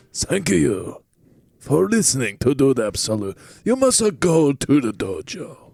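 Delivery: put-on Japanese accent. Asked by another speaker for a taste, doing a sign-off in a racist Japanese accent. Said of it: "definitely racist Japanese accent".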